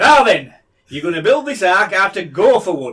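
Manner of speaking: put-on loud Yorkshire accent dad voice. Retelling the Noah story, the speaker plays God: Yorkshire dad voice. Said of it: "God is like a Yorkshire dad".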